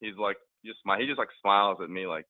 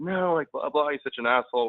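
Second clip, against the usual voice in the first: put-on screaming, much higher; 8 semitones higher, 4 dB louder than usual. Telling a story about a drunk woman on a dance floor, imitating someone screaming. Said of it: "she like starts screaming".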